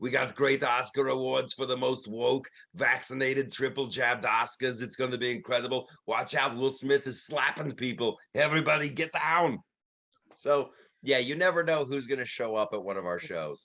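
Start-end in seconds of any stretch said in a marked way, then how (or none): 0.0-9.6 put-on Austrian-accented voice. Showing an occasional guest impression at the shows: Arnold Schwarzenegger impression. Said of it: "occasionally Arnold Schwarzenegger, he'll come in".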